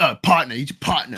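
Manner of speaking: street-style vernacular speech.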